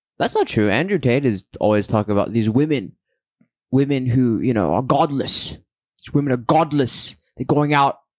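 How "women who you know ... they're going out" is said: put-on sudden switch into a British accent. Showing how Andrew Tate is always talking about women, Andrew Tate impression turning British. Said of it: "I don't know why I just turned into a British".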